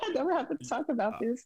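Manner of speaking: high, tearful voice close to breaking into tears. Telling a listener about her past, on the verge of tears. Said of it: "you're going to make me cry".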